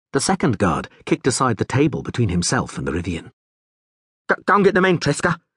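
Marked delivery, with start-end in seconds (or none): 4.3-5.4 very high, shrill shout. A guard calls to the third guard by the door, shouting. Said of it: "he shouted to the third guard".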